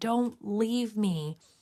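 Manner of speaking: mock pleading, high begging cry. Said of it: "seeing him yelling at us".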